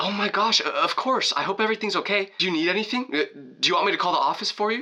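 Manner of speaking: gushing, caring, high, sympathetic teacher voice. Retelling a teacher's reaction to a friend's fake emergency: imitating a sympathetic teacher. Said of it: "She's so sympathetic that she goes".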